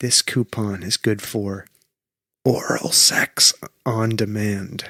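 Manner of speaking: whispered voice. Reading a coupon aloud to another speaker: whispering. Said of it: "I'm gonna whisper it".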